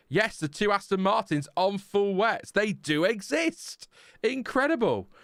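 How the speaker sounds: dry, sarcastic, high-pitched faux amazement. Reacting to the Aston Martins being on full wets: sarcastic tone. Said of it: "Can you sense the sarcasm?".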